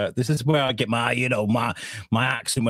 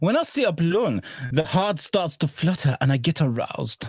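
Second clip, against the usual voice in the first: mock, fake German accent; 5 semitones higher than usual. Speaker shows what a real attempt at a German accent would be, put-on German accent. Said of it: "German would be".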